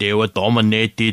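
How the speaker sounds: really bad put-on cyborg voice. Summing up a Bengals game, in a bad Terminator impression. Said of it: "That was a really bad Terminator impression".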